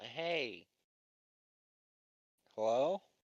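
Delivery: loud shouting. Calling out to a figure struggling with a bronze head, yelling out. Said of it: "Can I yell?".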